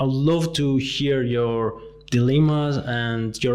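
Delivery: plain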